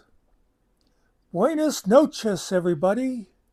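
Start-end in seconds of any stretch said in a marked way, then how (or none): 1.3-3.2 bright, cheerful voice. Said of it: "she says".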